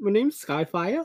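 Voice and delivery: put-on Irish-Scottish accent. Retelling a cartoon scene where Skyfire introduces himself, slightly Irish or Scottish accent. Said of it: "No idea what accent I'm doing".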